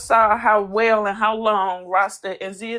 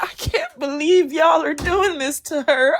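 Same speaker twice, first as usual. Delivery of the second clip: put-on fake tearful voice, high, drawn-out crying; 6 semitones higher than usual. Retelling what a castmate said while crying for K G: imitating someone fake crying. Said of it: "when she cried for K G".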